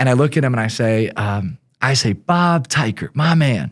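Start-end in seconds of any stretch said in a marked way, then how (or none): 2.1-3.7 slow, put-on, inauthentic swagger faking confidence. Retelling walking into a conference room: imitating his own fake bravado. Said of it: "with as much inauthentic bravado".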